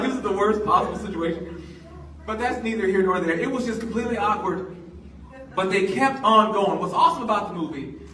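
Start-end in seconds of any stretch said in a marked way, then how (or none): none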